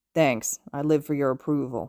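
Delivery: slow, lazy, dragged-out drawl. Narrator reads Hitoshi answering Shoto's thanks, drawling. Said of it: "Hitoshi drawls".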